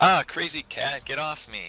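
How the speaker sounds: long, slow, drawn-out stretched shout. Voicing a character hit again by a cat, yelling. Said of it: "Then he yells".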